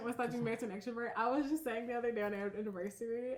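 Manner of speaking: fast, excited rush of words. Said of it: "I know I'm talking fast, but I'm excited".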